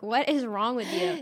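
ordinary talk

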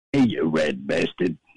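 fake, very deep, very low joke voice. Calling in to a show and greeting the host: put-on fake voice for a gag. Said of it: "that wasn't my real speaking voice".

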